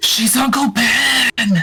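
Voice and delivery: whispered aside in character voice. Leaning over to another character at the table: whispering in character. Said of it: "and just whisper".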